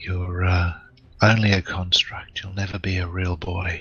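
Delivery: hushed whisper. A player's character whispers in a construct's ear, lowered-voice whisper. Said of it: "he lowers his voice and whispers in its ear".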